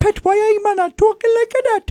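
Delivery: very high, put-on Newcastle Geordie accent. Speaker mimics how a woman from Newcastle talks, in a put-on Geordie accent. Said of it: "when she talks like this".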